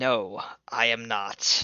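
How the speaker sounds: seething, forced out between clenched teeth. Asked by D3 whether he's okay, Duke answers through gritted teeth. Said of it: "through gritted teeth Duke say".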